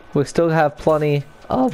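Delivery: voice breaking partway through the phrase. Talking through which player to sign next; voice cracking. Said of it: "that was a voice crack".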